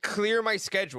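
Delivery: ordinary delivery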